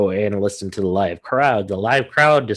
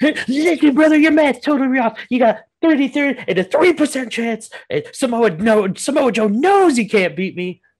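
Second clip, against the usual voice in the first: very high-pitched put-on voice. Imitating a wrestler doing his percentage math: Scott Steiner impression. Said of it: "he does the Steiner math perfectly".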